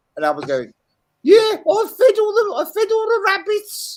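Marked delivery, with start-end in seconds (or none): 1.2-3.9 put-on Brummie accent, very high and loud. Retelling what Al said in the background, imitating Al in a Brummie accent. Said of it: "Why was he doing a, a Brummie accent then?".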